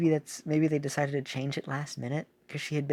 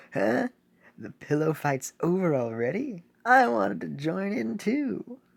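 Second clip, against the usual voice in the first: high, put-on game character voice; 5 semitones higher, 4 dB louder than usual. Reading game dialogue aloud for Vampire Cookie, Vampire Cookie voice. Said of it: "I'm giving him that voice".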